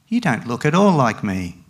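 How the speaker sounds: usual speaking voice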